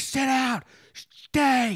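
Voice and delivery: very high, shrieked, screamed delivery. Recounting cleaning up after the grandmother's dog, retelling screaming at it. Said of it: "I just screaming at this dog".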